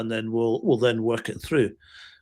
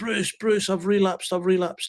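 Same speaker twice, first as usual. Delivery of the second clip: mock on the verge of crying, high voice; 8 semitones higher than usual. Retelling a man's sunday morning phone call, imitating a man near tears. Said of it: "and he almost in tears".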